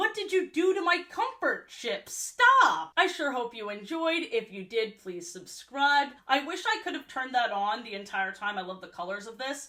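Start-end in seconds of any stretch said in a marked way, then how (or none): 0.0-2.9 loud, high-pitched outcry. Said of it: "Holly looked so attacked".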